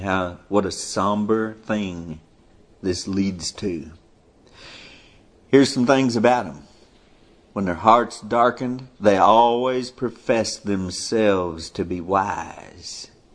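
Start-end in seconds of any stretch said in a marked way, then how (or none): 0.0-3.9 slow, unhurried and quieter delivery. Speaker slows down so the point sinks in for listeners, talking slowly. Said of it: "I'm just talking slow".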